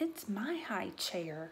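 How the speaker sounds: soft, hushed half-whisper under the breath. Peter answers his father's offer about his sister's high chair, half-whispered. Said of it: "whispered Peter".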